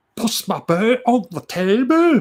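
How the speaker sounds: very bad fake Scottish accent, high, loud. Talking about wanting to pet a Highland cow, he uses a very bad Scottish accent. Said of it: "very bad rendition of a Scottish accent".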